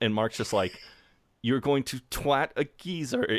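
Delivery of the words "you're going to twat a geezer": acted snooty, condescending disbelief, pitched up. Retelling how Mark answers Jeremy's story: imitating Mark's condescending tone. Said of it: "in the most, like, condescending way possible".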